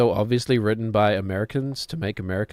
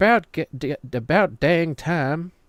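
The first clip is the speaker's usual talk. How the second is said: put-on American accent, high-pitched and very slow. Retelling a movie scene where someone chimes in, American accent. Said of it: "In an American accent for some reason".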